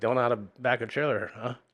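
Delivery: ordinary delivery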